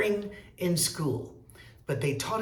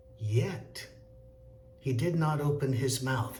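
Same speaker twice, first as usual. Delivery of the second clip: voice drops to lower tone at end; 3 semitones lower than usual. Reading a line aloud to show tone following the words: lowered pitch. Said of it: "That's when you lower the tone".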